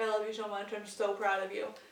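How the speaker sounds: usual speaking voice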